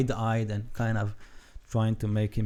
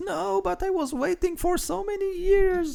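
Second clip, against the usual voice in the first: piercing, very high shriek; 3 dB louder than usual. Voicing a character who screams at the others: screaming. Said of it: "she screams".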